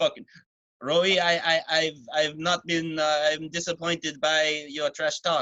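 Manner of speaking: unhurried, slow Canadian fighter-style voice. Doing an impression of GSP reacting to trash talk: GSP impression. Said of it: "That's my G S P impression".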